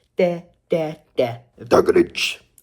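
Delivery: slow, stretched-out put-on voice. Reviewing the Grinch movie, doing a Grinch impression. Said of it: "That was my impression of the Grinch".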